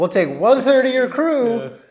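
high, loud, mock alien voice. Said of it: "and they're like".

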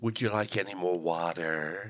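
put-on soft, low North American accent. Quoting someone in North America speaking to you, imitating a North American accent. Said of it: "somebody in North America saying to you".

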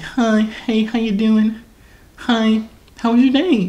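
very high fake girly voice, slow. Describing how a guy sounded on FaceTime, doing a dude faking a girl voice. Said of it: "when a dude is trying to do like a girl voice".

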